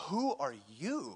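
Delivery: mock disdainful, scornful contempt. A speaker acts out a ruler confronting an old shepherd, with mock disdain. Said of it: "Pharaoh looks with disdain at this old Hebrew guy".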